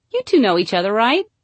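innocent tone, rising at end. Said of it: "say all innocent like".

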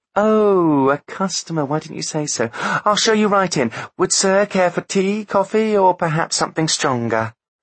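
sudden, very high, eager-to-please charming voice. A nurse, told Artemis is a customer, is suddenly all charm. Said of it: "suddenly the nurse was all charm".

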